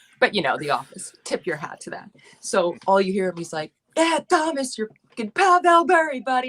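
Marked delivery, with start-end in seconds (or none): 4.0-6.5 put-on screaming with Long Island accent. Act out Prison Mike screaming from the side at a hockey player, in a thick Long Island accent. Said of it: "like in a thick Long Island accent, screaming".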